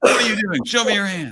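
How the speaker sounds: super-excited, very high, loud shout. Teaching how to approach a person calmly, speaker demos the wrong way: too much energy. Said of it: "I'm not like super excited".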